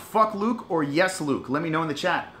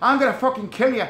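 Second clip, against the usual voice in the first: terrible fake British accent slipping into Irish, high; 6 semitones higher, 4 dB louder than usual. Acting out the fighter coming in for the second fight: bad Michael Bisping accent, sounds Irish. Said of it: "that's like an Irish accent".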